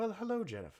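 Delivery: gentle, soft, hushed, slightly high voice. Recounting a ride where a barely recognized face greets Jennifer: soft voice. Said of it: "As you hear a soft voice".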